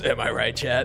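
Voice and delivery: mocking smug voice, imitated. Retelling a voice troller mocking other players: imitating a smug streamer. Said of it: "the way he goes".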